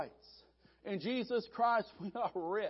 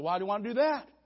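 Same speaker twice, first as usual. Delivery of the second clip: put-on nervous voice. Telling a joke, the storyteller voices the pilot answering the photographer, acting out a nervous pilot. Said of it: "Nervous pilot said".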